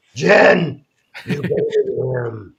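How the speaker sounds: very slow, deliberate character voice, words drawn out. After announcing the voice to Joe, address Jen about her statement in Bat Dad voice. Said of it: "I'm going to say it in Bat Dad voice".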